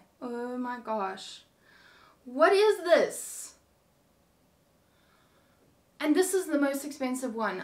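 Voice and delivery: loud, utterly disgusted, revolted outburst. Reviewing the most expensive swimsuit for viewers, disgusted. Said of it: "I am absolutely disgusted".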